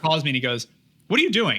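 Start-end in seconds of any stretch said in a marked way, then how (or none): 1.1-1.6 play-acted, pitched-up, short-tempered angry dad tone. Retelling a phone call from dad who had a temper: imitating dad's angry tone. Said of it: "And I knew that tone".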